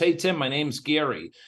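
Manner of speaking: ordinary talk, nothing marked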